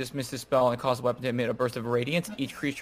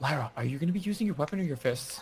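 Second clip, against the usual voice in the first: said quietly; 2 semitones higher, 5 dB quieter than usual. During the stealth part of a game, a player asks lyra something, quiet. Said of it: "quietly say".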